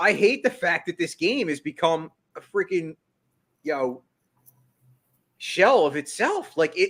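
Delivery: teary, near tears, passionate emotional voice. A passionate baseball fan speaking about the sport, tearful. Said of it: "I'm actually getting teared".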